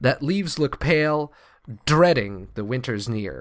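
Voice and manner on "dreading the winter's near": dreading with heavy stress on first syllable DREAD. Reading a line of verse with a trochee: stress on DREAD in dreading. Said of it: "To stress that first syllable".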